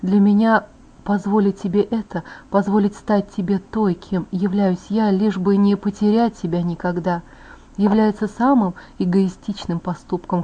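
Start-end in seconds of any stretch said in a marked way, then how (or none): none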